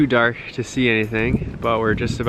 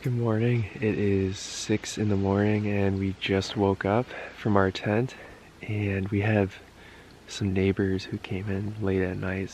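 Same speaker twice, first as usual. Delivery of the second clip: soft half-whisper, kept hushed throughout; 3 semitones lower, 6 dB quieter than usual. Six in the morning in a tent with neighbors nearby, half-whispering. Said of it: "so I have to kind of whisper".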